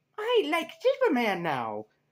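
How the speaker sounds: put-on high, swooping little kid voice. Reviewer imagining a kid watching the show, attempted kid voice. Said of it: "I can't really do the kid voice".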